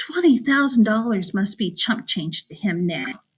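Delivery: ordinary delivery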